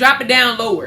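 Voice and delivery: ordinary delivery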